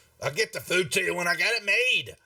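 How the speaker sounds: gruff dwarf woman voice. Narrating a scene and voicing someone out back making food, gruff female voice. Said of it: "you hear a you know a gruff female voice".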